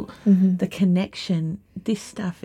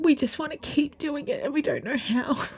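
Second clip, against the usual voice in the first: overcome with emotion, pitched-up voice; 8 semitones higher, 5 dB quieter than usual. Describing people coming together after a lonely time: emotional. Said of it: "Are you okay?".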